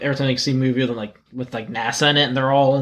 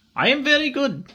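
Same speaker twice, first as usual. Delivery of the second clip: poor put-on Russian accent; 12 semitones higher than usual. While drinking, a speaker tries a shitty russian accent. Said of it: "Dylan's shitty Russian accent".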